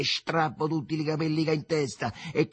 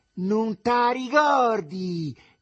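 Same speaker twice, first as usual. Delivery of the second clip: piercing, screeching, very high, very loud shout; 7 semitones higher, 5 dB louder than usual. A woman hurls insults at a man's mother, very shrill shouting. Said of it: "gridò con voce acutissima".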